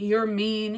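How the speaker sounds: ordinary talk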